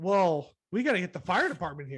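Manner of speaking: completely sarcastic, swooping, sing-song quip. Retelling their own reply after she compared their gums to a house, retelling a sarcastic reply. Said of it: "completely sarcastic".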